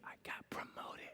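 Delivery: hushed, secretive whisper under the breath. Retelling how a friend shared good news on the phone: imitating a whisper. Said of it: "called me and whispered to me".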